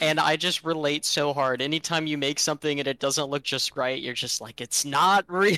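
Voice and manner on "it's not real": acted, raised, exasperated, frustrated artist voice. Describing how it feels when something you made looks wrong, mock-frustrated artist voice. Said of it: "Like that frustrated artist voice".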